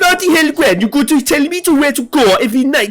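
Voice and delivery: mock-angry thick Welsh accent. Acting out how people in wales sound when they get really angry, mock-angry, thickening welsh accent. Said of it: "the accent gets thicker".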